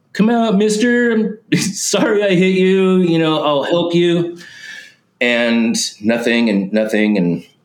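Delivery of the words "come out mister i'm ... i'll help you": put-on very high, upset, distraught shouted pleading. Retelling calling out from a guardrail after hitting someone: imitating own past yelling. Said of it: "standing on the guardrail and yelling".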